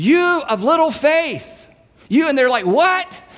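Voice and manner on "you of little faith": loud, raised, projected mock delivery. Retelling the story, the speaker voices Jesus answering those crying to be saved; loud. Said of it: "And he says loudly".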